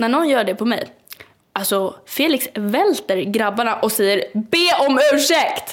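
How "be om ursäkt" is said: high-pitched shouted yell. Speaker re-enacts her boyfriend yelling at a man who shoved her on the dance floor: retelling a yell. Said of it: "förlåt att jag skrek jätte".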